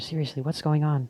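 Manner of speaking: hushed whisper. Hiding after being told to keep quiet: whispering. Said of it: "fine, I'll whisper".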